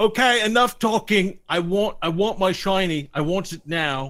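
loud, slow, high-pitched. Voicing the Cyclops demanding his stolen item: Cyclops voice. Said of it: "the Cyclops said".

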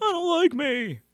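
very high, shrill, teasing mocking voice. Showing the other speaker an impression of their voice. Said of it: "I could do yours".

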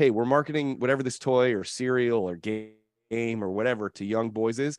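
ordinary talk

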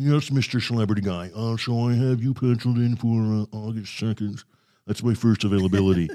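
put-on rich upper-class accent. As a scheduler giving a celebrity their first available date, in a Thurston Howell accent. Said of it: "you got to put in your Thurston Howell accent".

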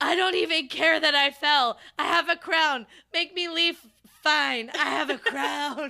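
full-on, very loud screaming. Retelling being escorted out after falling down: retelling own screaming. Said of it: "I started screaming".

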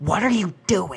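high, loud, flipping-out anime-fan way of talking. Retelling how a guy named Scott flips out and runs over, imitating Scott's anime-fan voice. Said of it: "people that talk like this".

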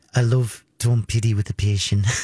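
tentative, attempted New Zealand accent. Showing the phrase used to master the accent, practicing a new zealand accent. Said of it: "the way I would try to master the accent".

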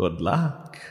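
small, little, low voice. Narrating a scene where Vale speaks from the unseen wind, a little voice. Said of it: "this little voice on the unseen wind".

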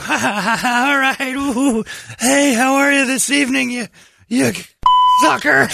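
very high, unhurried voice with laughter. Retelling how Brady greeted an older woman: imitating Brady greeting someone. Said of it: "and Brady would go".

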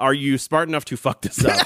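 ordinary delivery

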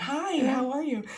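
very high put-on customer service voice. Retelling greeting people after changing attitude, in a put-on customer service voice. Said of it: "you put your like customer service voice on".

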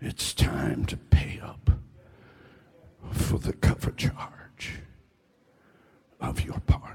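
whispered, breathy, hissing devilish voice. Speaker acts out Satan demanding payment in a talk to an audience: hissing Satan voice. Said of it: "Satan comes with his bony hand outstretched and hisses".

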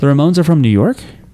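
sounding surprised. Asking where a band is from, sounding surprised. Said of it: "you're saying it like you're surprised to hear it".

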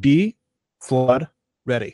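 each word split off by long pauses. Announcing a town event whose name has periods; pregnant pauses between words. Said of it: "And I say it like that. You have to have the pregnant pauses there because it's periods".

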